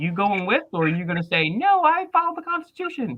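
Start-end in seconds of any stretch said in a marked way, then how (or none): 1.5-3.2 very high-pitched put-on voice. Imitating the guest answering a hypothetical order: Alexia impression. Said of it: "That's my best Alexia impression".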